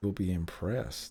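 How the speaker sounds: close, soft, hushed half-whisper. Speaking into a character's ear while casting Thaumaturgy: half-whispering. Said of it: "I whisper in John's ear".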